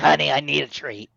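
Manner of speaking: put-on creaky, washed-up voice with New York accent. Voicing a pet cat as a washed-up New York star: washed-up New York star voice. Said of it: "the voice of, like, uh, a washed up s-, New York star".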